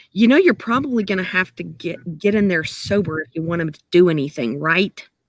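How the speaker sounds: hushed sotto voce whisper. Narrating a game scene, a character leans in to speak privately: whispering sotto voce. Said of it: "whispers really sotto voce".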